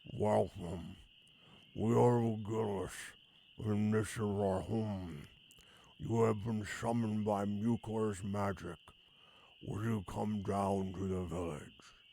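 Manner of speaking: rough, pebbly creature voice, like pebbles in a bag. A narrator voices a creature welcoming summoned visitors: voice like a bag of pebbles. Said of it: "Its voice sounds like a bag of pebbles".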